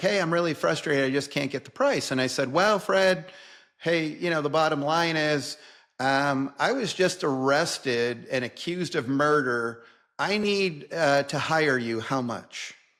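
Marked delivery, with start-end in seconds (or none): 0.0-2.1 even-tempered, composed, calm, rattled-off delivery. Retelling an attorney's call demanding the price: imitating a calm complaint. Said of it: "And so calmly as he gets".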